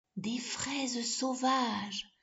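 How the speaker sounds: low-voiced devil voice. The devil answers Billy's question, in a hushed voice. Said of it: "lui répondit le diable à voix basse".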